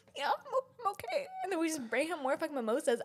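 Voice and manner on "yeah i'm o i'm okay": very high, tearful voice cracking and breaking. Retelling what a crying customer said when checked on: imitating a cracking, tearful voice. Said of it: "his voice would crack".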